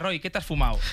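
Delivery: ordinary talk, nothing marked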